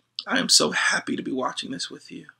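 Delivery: soft, hushed whisper close to the ear. Retelling whispering to a child during a cartoon: retelling a whisper. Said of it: "I just whispered in his ear".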